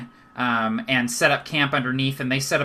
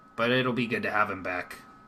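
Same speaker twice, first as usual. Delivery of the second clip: soft voice sinking to a hush; 4 semitones lower, 6 dB quieter than usual. Voicing a dwarf speaking of a returning friend: hushed voice. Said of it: "his voice hushes and he says".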